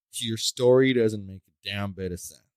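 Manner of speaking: ordinary talk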